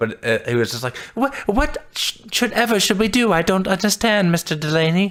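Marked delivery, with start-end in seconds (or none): 1.1-5.1 very high, frightened, odd whining voice. Retelling a scared character's line to another speaker: imitating a character's weird scared voice. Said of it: "he had a really weird voice".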